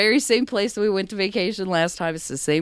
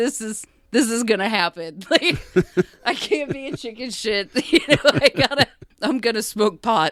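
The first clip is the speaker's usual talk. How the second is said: freaked-out, panicky voice; 4 semitones higher than usual. Retelling being sixteen as a joint gets rolled, imitating own past freaking out. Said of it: "freaking out".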